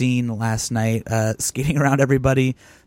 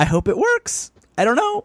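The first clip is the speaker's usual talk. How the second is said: very high, squeaky put-on voice, swooping; 10 semitones higher than usual. Quoting the other speaker's last words back: imitating a high-pitched voice. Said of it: "the high-pitched voice there going".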